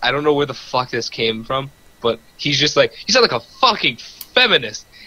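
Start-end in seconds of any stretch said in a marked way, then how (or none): 2.9-4.8 high, blurted-out, acted shout. Retelling what one dude shouted out to the group: retelling a shout. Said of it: "He just shouts it out there".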